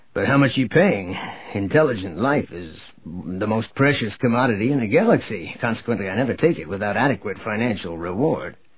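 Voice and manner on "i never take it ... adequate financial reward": ordinary delivery, nothing marked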